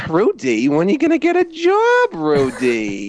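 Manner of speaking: squeaky, swooping little cartoon mouse voice. Showing what a long-running bit evolved into, the speaker calls to someone in a put-on voice. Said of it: "it evolved into me just going".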